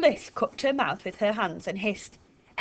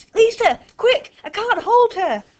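very loud, very high, urgent yell; 13 semitones higher, 8 dB louder than usual. Fliss, unable to hold a girl back, cries out to Gary and Lisa. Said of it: "cried Fliss".

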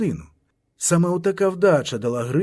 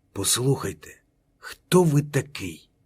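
angry, held-back, controlled fury; 2 semitones lower than usual. A teacher losing his composure steps right up to a note-taking man; hushed angry voice. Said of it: "запитав притишеним гнівним голосом".

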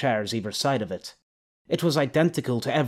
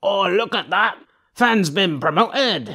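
put-on rowdy, loud, raised drunken taunting jeer; 8 semitones higher, 6 dB louder than usual. Narrator reads a drunken tavern regular taunting a man heading upstairs: drunken jeering taunt. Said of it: "Drunken jeers accompanied the taunting".

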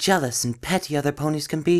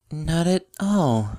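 halting, uncertain, hesitant delivery. Narrator reads Twilight stepping back from a staring, laughing mare, hesitant. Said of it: "Twilight replied hesitantly".

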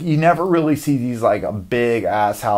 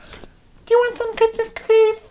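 mock very high, sudden, sugary sweet voice. Acting out a moody wife's sudden sweet turn: imitating a sudden sweet switch. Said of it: "one moment she can be real snippy. The next she can just be like".

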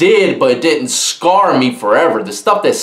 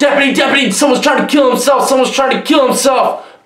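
high, frantic, panicked screaming. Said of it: "you hear a guy screaming".

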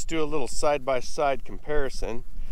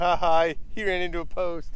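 quieter put-on mocking laughter; 4 semitones higher, 6 dB quieter than usual. Telling how a calf reacted to you, voicing a calf laughing at you. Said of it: "That is laughing at me".

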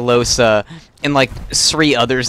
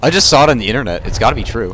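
usual speaking voice

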